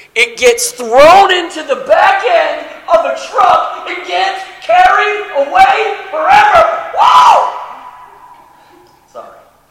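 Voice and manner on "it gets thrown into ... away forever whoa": loud, high-pitched, excited shout. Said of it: "I get excited".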